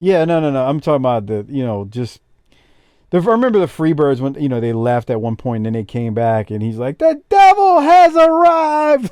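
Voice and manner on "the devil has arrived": very high, very slow, drawn-out disappointed yell. Retelling how an announcer sold a wrestling team's return: imitating a disappointed yell. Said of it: "he was so disappointed but yelling at the same time".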